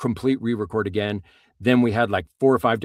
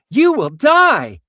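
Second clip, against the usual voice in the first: very high, bright, overexcited, happy upbeat voice; 8 dB louder than usual. Demonstrating an overexcited character talking about your death, in a happy upbeat voice. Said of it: "in a really happy, upbeat voice".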